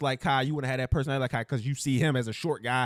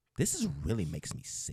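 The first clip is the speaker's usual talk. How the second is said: over-the-top put-on breathy, exaggerated woman voice; 3 semitones lower, 8 dB quieter than usual.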